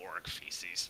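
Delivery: low mumble under the breath. Player's character, glancing back at Ilix and Zendira, mumbles under the breath. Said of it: "I mumble under my breath".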